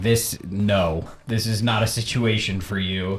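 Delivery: ordinary talk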